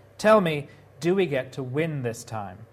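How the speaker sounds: ordinary delivery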